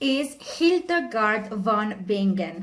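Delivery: name pronounced the German way. Introducing the second author, speaking with a german accent. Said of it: "sorry for my German accent".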